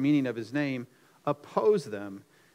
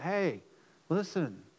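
hushed, close stage whisper; 3 semitones higher, 5 dB quieter than usual. Acting out someone half-whispering in the governor's ear: imitating a half-whisper. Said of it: "whispering in the governor's ear".

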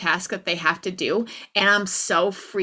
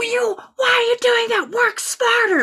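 very high, raised yell; 6 dB louder than usual. Retelling coaching girls, imitating yelling at them. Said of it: "I'm yelling that to these girls".

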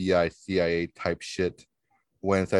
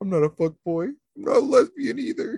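acted-out sobbing, very high pitch. Acting out Tony at the end of the recording, imitating Tony crying. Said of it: "Tony's going to start like crying".

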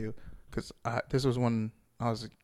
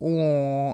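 loud, exaggerated mock baby crying and whimpering; 3 semitones higher, 7 dB louder than usual. Retelling how a friend mocked a man threatening him: mock baby crying. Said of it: "making this baby crying face at the guy".

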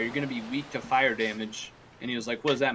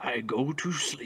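effortful put-on vampire voice; 4 dB quieter than usual. Answering another speaker's question, speaking in a put-on vampire voice. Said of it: "super hard to talk like this".

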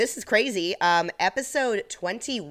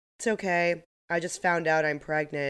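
mock flat monotone, deadpan delivery. Retelling what a woman told the speaker, imitating her flat monotone. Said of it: "Very monotone".

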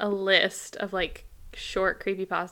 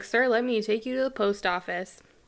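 normal talking voice

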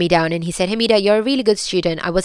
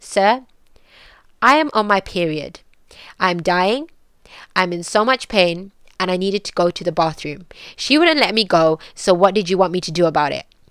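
put-on dead serious, straight-faced, unembarrassed no-nonsense delivery. Retelling what was said to a man at school: imitating own straight-faced delivery. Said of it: "said it with the most straightest face".

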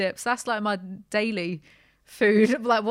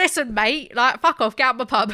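loud, brash pub landlady voice; 2 semitones higher, 5 dB louder than usual. Told their accent went Peggy Mitchell, the speaker plays along: Peggy Mitchell impression. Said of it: "you went very Peggy Mitchell".

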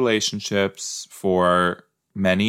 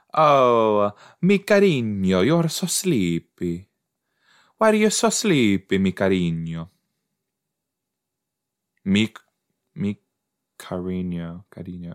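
Spanish in an Italian accent, drawn-out "oh". Speaking Spanish to someone sleepy: Spanish with an Italian accent.

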